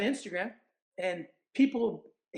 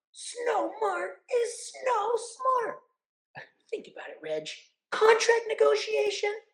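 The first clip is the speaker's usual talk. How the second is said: very high cartoon voice with wildly swinging pitch; 13 semitones higher than usual. Recalling an episode, the speaker performs a line in Otto Rocket's voice. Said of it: "Every time somebody asks me to do the voice".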